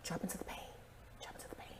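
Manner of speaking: hoarse, breathy near-whisper, voice giving out. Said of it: "her voice is like, in desperate need of a lozenge".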